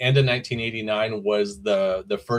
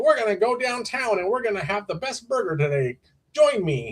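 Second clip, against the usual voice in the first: put-on bubbly, peppy little-kid reporter voice, very high; 11 semitones higher than usual. Showing a friend how a kid talks about National Hamburger Day, imitating a young kid reporter. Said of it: "and that's how he talks".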